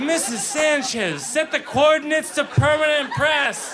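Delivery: commanding, authoritative captain voice.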